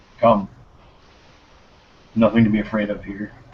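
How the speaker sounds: gentle, calm, soothing, reassuring tone. Reaching a hand through the ice toward someone curled underneath, very quiet. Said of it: "very quietly say".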